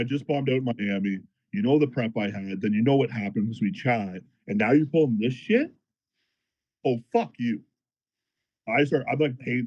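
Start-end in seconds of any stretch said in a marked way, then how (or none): none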